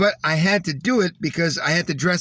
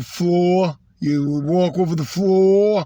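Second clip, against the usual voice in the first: put-on, slow, over-enunciated New York accent on floor; 3 dB louder than usual. Describing a guy with a New York accent, imitating his New York accent. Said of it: "the New York accent".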